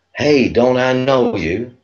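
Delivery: put-on corny American accent, high and slow. Retelling what a girl said to them, in a put-on American accent. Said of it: "You have to do that accent".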